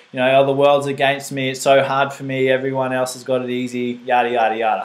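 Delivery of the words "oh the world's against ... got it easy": ordinary talk, nothing marked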